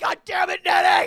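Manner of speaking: very high, very loud shout. Retelling carrying a drunk friend who kept resisting: retelling own yell. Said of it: "finally I yelled".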